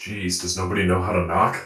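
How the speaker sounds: very low, booming character voice from the chest. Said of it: "quite the voice".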